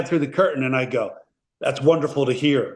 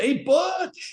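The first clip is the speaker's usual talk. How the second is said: put-on yelling, pitched higher. Retelling how an actor yelled a greeting across the set: imitating someone yelling. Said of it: "he yells to me".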